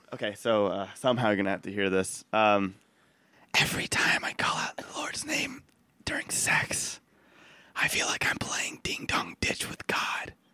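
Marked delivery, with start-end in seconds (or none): 3.6-10.3 soft, breathy, seductive whisper. Reading a card aloud in a party game: sexy whisper. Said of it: "I'm gonna go with Sexy Whisper".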